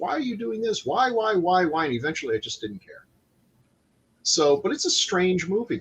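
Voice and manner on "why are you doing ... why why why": acted scream, higher pitched. Retelling reactions to a movie, imitating own screaming at the screen.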